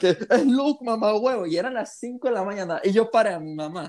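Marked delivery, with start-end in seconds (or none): 0.0-1.5 shout, much higher. Retelling shouting to their mom at five in the morning, reenacting own shouting. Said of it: "yo empecé como que a gritar".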